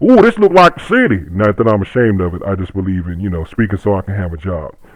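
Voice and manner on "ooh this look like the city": put-on very high-pitched backwoods rural country accent. Recalling how the speaker talked as a kid from Deep Sticks, USA: rural country accent. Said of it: "I really used to talk like that too".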